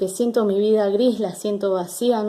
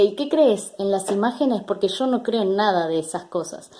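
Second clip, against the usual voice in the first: usual speaking voice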